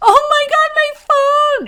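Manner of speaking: very high, loud, drawn-out, put-on wailing sob. Retelling a daughter's reaction to getting her phone back: imitating someone crying. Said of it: "And she just cried".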